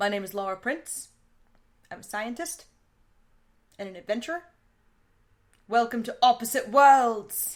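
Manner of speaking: flat, lifeless reading with no spark. Redoing the show host's opening line to sound more like him. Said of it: "Can I do that again to sound more like him?".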